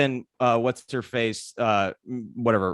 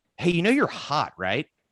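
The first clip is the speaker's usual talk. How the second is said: mock nasal, infuriating voice, much higher pitch; 5 semitones higher than usual. Retelling a man approaching a seventeen-year-old girl, in a mock nasally, infuriating voice. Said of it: "has a nasally, uh, infuriating accent".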